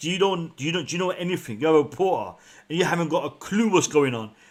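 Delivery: mocking, sarcastic tone. Imitating Haaland answering a reporter: imitating Haaland being sarcastic. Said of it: "was trying to be sarcastic with that reporter".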